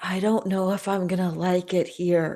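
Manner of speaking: whispering under her breath. Voicing a character aside to a companion: whispering under her breath. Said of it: "whisper under her breath".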